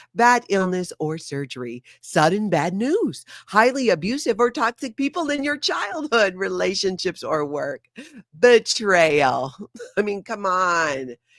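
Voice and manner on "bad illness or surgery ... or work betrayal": promo-style reading voice, like a promotional video. Speaker reading a list to viewers in the Scientology voice. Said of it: "Let's do a little bit of the Scientology voice".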